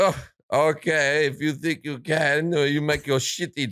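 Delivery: put-on Italian accent. Retelling an Italian's reply to a man wanting to buy a Ferrari, in a put-on Italian accent. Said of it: "I'll do the voice and the hands and everything because it's it's Italians".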